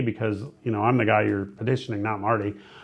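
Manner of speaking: ordinary talk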